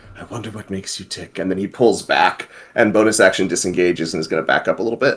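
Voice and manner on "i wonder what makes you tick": very quiet, barely audible muttered aside. Game player speaking as his character Faustus near Raven, muttering under his breath. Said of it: "he's just under his breath".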